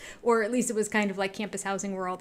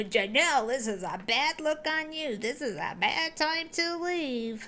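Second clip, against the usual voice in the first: higher-pitched yelling; 5 semitones higher than usual. Retelling how he kept yelling at janelle: imitating someone yelling. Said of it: "he just kept yelling until eventually".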